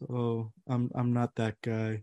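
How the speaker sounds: put-on bashful, sheepish voice, soft and slow. Retelling how the other Erik Karlsson answered a teammate's question, imitating a sheepish reply. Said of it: "And like sheepishly".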